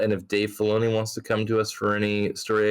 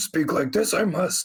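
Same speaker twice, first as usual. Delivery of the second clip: put-on wise old alien voice, higher; 8 semitones higher than usual. Joking about Grogu suddenly talking like Yoda in a movie: Yoda voice. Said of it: "Yoda talks in the movie".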